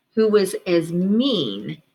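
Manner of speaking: plain reading voice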